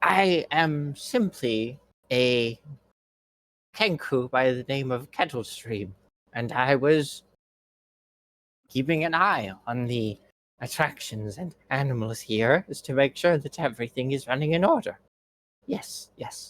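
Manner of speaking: soft, gentle, whimsical, fanciful bird-creature voice. Voicing a Kenku named Kettlestream after its squawks stop: softer, whimsical Kenku voice. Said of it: "a softer, more whimsical tone".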